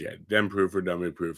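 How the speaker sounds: ordinary delivery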